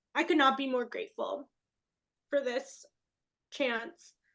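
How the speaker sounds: tearful, halting speech through happy crying. Speaker on being cast in a Neil Simon play, crying happy tears. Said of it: "I'm crying, first of all. Happy tears".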